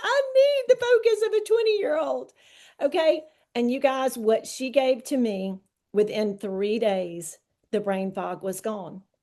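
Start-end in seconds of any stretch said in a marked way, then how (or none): 0.0-2.3 very high-pitched, tearful, crying, pleading voice. Retelling a talk with a prayer partner about brain fog: imitating her own past crying. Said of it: "I'm crying, going".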